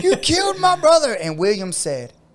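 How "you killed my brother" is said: very high-pitched, loud yell. Retelling a fight where the other brother yelled: imitating someone yelling. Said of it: "yelling at him".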